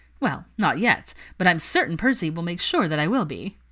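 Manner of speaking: usual speaking voice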